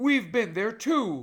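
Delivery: sharp, high, loud snapping voice. Reading a story aloud, voicing an angry character's reply: snapped. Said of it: "snapped Jill".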